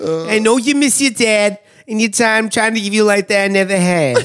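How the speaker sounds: angry, mad-sounding put-on Italian accent. Showing how they always end up saying it, in a mad Italian mom accent. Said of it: "Or like a mad Italian mom".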